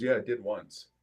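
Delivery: acted deadpan, low and completely straight. Retelling a buff gym guy's answer about working out: imitating someone saying it very seriously. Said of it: "he would say it real serious".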